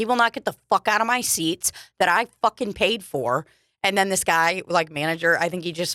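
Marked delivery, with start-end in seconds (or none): 0.0-3.5 acted-out mad, heated, worked-up insistent tone. Retelling complaining to a person about a guy in their seats: retelling own angry words. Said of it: "I got so mad".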